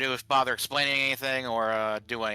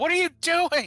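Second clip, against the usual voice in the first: very high-pitched, loud, angry yell; 6 dB louder than usual. Describing how Kara shouts at a faster player, retelling Kara's angry shout. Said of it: "she's just shouting at you".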